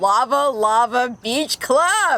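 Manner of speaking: slow, high, loud, big, drawn-out announcer delivery.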